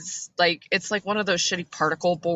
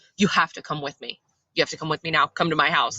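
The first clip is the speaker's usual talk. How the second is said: fast, frantic, hysterical, freaking out; 2 semitones lower than usual. Retelling how a woman from across the street begged an officer, imitating a hysterical plea. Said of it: "she's like hysterical and she's freaking out".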